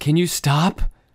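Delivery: put-on angry, fed-up woman's voice, loud. Retelling how a woman snapped at someone behind her: imitating an angry woman. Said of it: "She goes".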